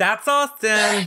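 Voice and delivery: high, slow speech through laughter.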